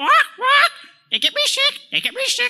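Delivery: shrill, very high, squawking talking-parrot voice. Performing a pirate scene for the group, now answering as the parrot, parrot voice. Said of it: "A proper British pirate and a parrot".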